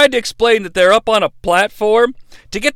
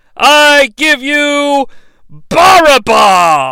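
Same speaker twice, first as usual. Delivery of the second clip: grand showman game show host voice; 4 semitones higher, 4 dB louder than usual. Presenting the second prisoner to the crowd, game show host voice. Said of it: "He then starts to channel a game show host".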